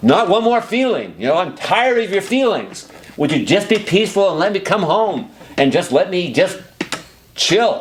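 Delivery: unhinged, maniacal, very high-pitched rant. Showing how to vent frustration at someone's anxious feelings: maniacal unleashed venting. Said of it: "representing the maniacal presentation like I did".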